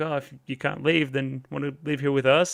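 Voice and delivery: wry, jokey sarcastic tone. Retelling a character's offer to live here: imitating a sarcastic, jokey tone. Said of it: "it's almost like a sarcastic, jokey".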